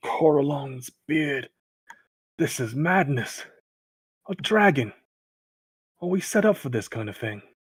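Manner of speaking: low muttering under the breath. Narrating a character who spots a dragon, muttering under his breath. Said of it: "curse under his breath as he says".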